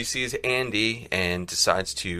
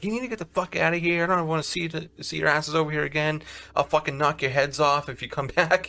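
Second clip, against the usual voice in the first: put-on furious yelling tirade, pitched high; 7 semitones higher than usual. Retelling how a wife yelled at two men to leave, imitating someone yelling. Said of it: "she's like yelling at Andy and Stanley".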